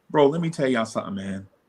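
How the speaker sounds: usual speaking voice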